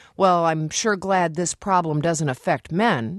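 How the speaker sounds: ordinary talk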